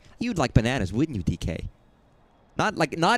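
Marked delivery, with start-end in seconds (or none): 0.2-1.6 put-on plain, matter-of-fact, stating-the-obvious delivery. Imitating how a character sounds when talking to D K, mock matter-of-fact tone. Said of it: "She always sounds so matter of fact".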